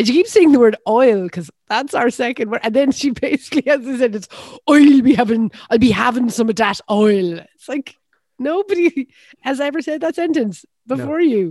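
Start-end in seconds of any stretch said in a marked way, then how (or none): 4.7-7.4 loud, very slow, exaggerated fake Irish accent. Retelling a woman's Irish accent lesson, quoting her sentence in a fake Irish accent. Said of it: "the most important thing in an Irish accent is oi".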